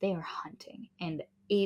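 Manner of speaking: unvoiced, hushed, suspenseful whisper.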